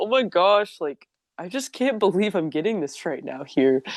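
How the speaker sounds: near-crying, tearing-up, tearful exclaimed voice. Retelling being given a Quran in class: imitating own tearful voice. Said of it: "I started crying when they gave it to me".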